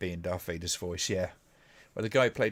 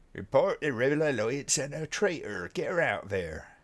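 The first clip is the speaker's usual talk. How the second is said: put-on English West Country accent. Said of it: "in his, um, West Country accent".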